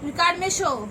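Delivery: loud coaxing voice.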